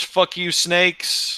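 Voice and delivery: very high, yelped-out cry. Narrating a scene, a little guy on a rooftop screams at the group: screaming. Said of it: "And he screams".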